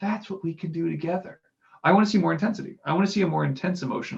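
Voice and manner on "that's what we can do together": acted easygoing, low-key, laid-back, relaxed delivery. Showing how Joe Biden says a line, laid-back Joe Biden delivery. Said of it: "with this kind of almost laid back voice of".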